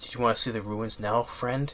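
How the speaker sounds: soft, hushed whisper, barely audible. Retelling a movie scene where a character speaks: imitating a whisper. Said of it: "Charlie Sheen goes and whispers, like".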